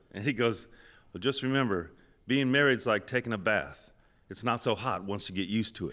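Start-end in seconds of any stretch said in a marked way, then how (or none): none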